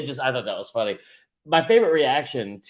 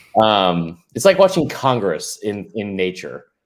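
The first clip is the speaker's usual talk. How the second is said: plain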